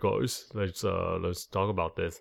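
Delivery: low, soft, manly guy voice. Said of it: "Most of you sound like".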